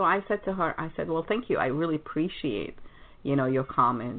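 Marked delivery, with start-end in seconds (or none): none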